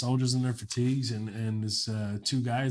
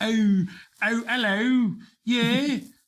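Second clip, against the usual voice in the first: bad put-on British accent, very high, very slow; 11 semitones higher, 6 dB louder than usual. Joking with another speaker, the speaker tries a terrible british accent. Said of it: "I love doing it terribly".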